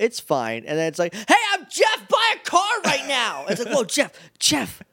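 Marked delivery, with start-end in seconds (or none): 1.1-3.5 loud commercial announcer voice, much higher, slower. Describing a sudden loud ad during a program, loud local business commercial voice. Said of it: "Local business commercial loud".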